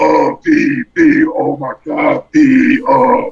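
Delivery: raspy, high, very slow drawl. Retelling a talk at a show, imitating Kurt D's raspy voice. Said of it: "and his raspy voice".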